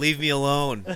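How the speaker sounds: very robotic put-on voice. Retelling what a guy at Urban Plates said to him, in a really robotic tone. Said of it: "In a really robotic tone".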